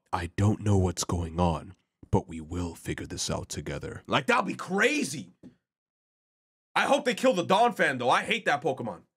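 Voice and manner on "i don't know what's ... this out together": very deep, as-low-as-possible creature voice. Imagining a Pokemon talking, in a deep Blaziken voice. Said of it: "with a deep-ass voice".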